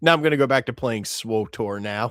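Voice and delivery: ordinary talk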